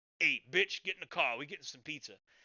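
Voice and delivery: put-on assertive, manly tone. Showing how guys talk to their girlfriends: imitating an assertive, manly command. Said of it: "it's assertive. It's manly".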